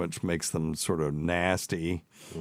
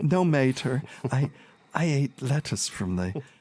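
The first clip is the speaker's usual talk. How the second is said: put-on small, high, childlike little kid voice; 7 semitones higher than usual. Retelling a story, speaker voices the girl answering her mother, little kid voice. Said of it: "I'm just trying to do a little kid".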